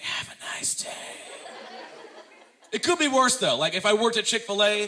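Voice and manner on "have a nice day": whispered, quieter. Retelling thanking airport security while saving the voice: imitating own whisper. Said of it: "I had to whisper the entire day".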